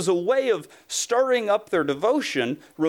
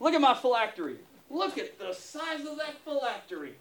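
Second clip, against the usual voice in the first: strutting, puffed-up show-off voice, pitched high; 6 semitones higher, 7 dB quieter than usual. Acting out Levi the Pharisee strolling into church: strutting as Levi the Pharisee. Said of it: "And Levi, I'd be strolling in".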